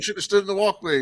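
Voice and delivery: put-on scolding, angry yell. Retelling what a dad yelled at his own kid, retelling an angry yell. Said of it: "He yelled at".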